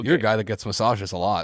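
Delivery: ordinary talk, nothing marked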